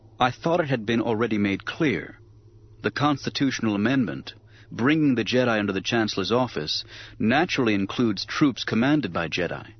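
ordinary delivery

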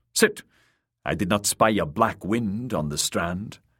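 plain reading voice

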